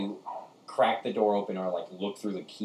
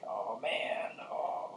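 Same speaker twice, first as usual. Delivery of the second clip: breathy, whispered little rat voice; 8 dB quieter than usual. Voicing a rat heard pacing behind a door: rat voice. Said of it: "he sounds like he's like".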